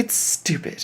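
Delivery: ordinary delivery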